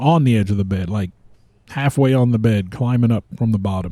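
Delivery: ordinary delivery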